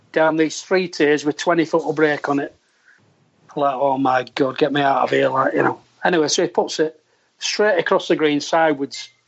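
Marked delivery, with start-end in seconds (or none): none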